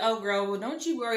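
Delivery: ordinary delivery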